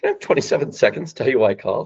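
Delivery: playful, curious, light chuckle, voice rising twice. Demonstrating how he opens a call, playful, curious, with a chuckle. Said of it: "I switch my voice to being playful and curious. So I put a little chuckle in my voice. My voice goes up twice".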